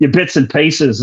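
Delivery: weak, bad put-on Australian accent. Asked to speak some Australian, attempting a bad Australian accent. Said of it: "about the best I can do with an Australian accent".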